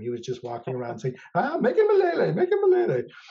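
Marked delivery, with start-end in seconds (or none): 1.3-3.0 put-on leprechaun Irish accent, much higher, louder. Retelling how someone kept repeating a woman's name, in a leprechaun Irish accent. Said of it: "saying it like a leprechaun".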